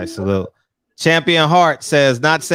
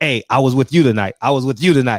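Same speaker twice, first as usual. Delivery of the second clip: ordinary talk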